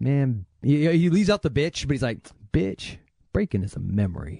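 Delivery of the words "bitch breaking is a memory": play-acted, low, menacing tough-guy delivery. Retelling a line from Electric Boogaloo, imitating a badass movie line. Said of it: "the way he says it is so badass".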